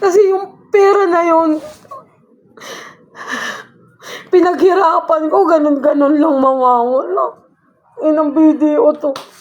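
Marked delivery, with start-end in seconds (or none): 0.0-7.4 tearful, annoyed, frustrated crying lament. After being sent from a closed branch to SM Taytay, near tears from frustration. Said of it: "naiiyak ako sa inis".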